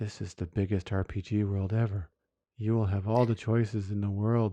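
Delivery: flat, level monotone trailer narration, zero excitement. Retelling how a game trailer sounded: imitating a monotone trailer voice. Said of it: "very monotonous, very monotone".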